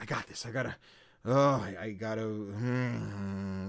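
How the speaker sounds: very slow, drained, worn-out voice coming apart. Retelling a game character's dialogue while running through a forest, imitating someone exhausted, losing it. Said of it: "like she's losing it".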